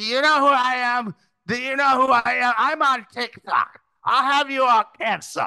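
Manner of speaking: put-on high, drunk, late-night bar ranting voice. Imitate how a wasted woman being escorted would have sounded, in a drunk in-a-bar-at-2-a.m. voice. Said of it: "do your in a bar at 2 a.m. voice".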